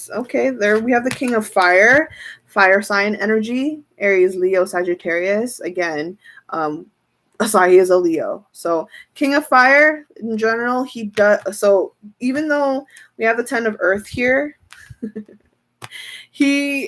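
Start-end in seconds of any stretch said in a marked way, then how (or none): 11.6-16.9 high, giggly voice, talking through giggles. Discussing the King of Fire card for Asahi, giggling. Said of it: "I'm giggling because it's cute".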